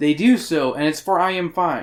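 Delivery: ordinary delivery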